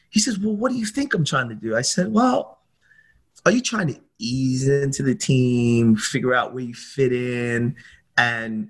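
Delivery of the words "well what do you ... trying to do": mock agitated, irritated, high and fast angry voice. Retelling his answer when asked in the car why he is angry, imitating a man getting angry. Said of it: "he starts to get angry".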